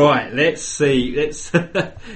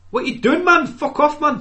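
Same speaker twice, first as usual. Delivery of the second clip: squeaky, very high, shaky, imperfect Geordie accent; 13 semitones higher than usual. Admitting he can't do it, then trying a geordie accent anyway. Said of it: "I can't even do a decent Geordie accent".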